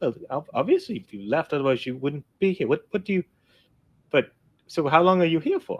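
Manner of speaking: confused, puzzled, baffled voice. Voicing a father questioning a child who came home early: confused. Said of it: "he looks confused".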